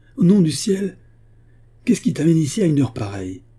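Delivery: sudden, high-pitched exclaiming cry, outburst. He lets Margaret in through the French window, crying out. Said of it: "s'écria-t-il".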